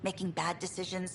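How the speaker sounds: plain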